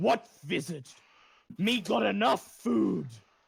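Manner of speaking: rough-edged, creaky giant character voice. A storyteller voices a giant questioning visitors, in a giant's voice. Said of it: "The giant says".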